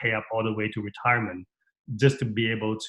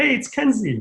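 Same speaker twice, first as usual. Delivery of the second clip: put-on high, excited little-girl voice. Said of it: "She's like".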